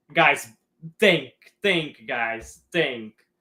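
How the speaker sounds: put-on patronizing, condescending, lecturing tone. Discussing whether Pep plays him as a winger: Levi Rossman impression, mock-condescending. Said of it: "That sounded very condescending. ... I was trying to uh, do an impersonation of Levi Rossman".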